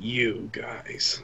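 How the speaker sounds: disdainful, distasteful, breathy whisper, barely voiced. Narrating as Tharmas speaks up to the group: distasteful Tharmas voice. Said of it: "speak up in a most distasteful voice".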